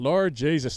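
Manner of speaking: horrible attempted Irish accent. Answering a request to give an irish accent: horrible attempted irish accent. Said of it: "Give me an Irish accent".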